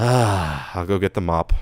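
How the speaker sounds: put-on weary deadpan voice. Acting out a cartoon sidekick walking into a mess: deadpan, tired voice as Spike. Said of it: "deadpan, just tired of it".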